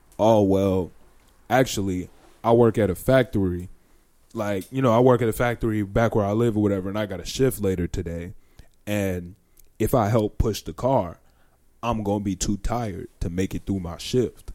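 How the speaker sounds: put-on deep voice. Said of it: "deep ass voice, deeper than yours".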